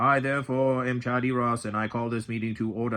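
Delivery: mocking, put-on British accent. Recounting how someone mocked them calling a meeting to order, British accent. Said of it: "He used a British accent saying".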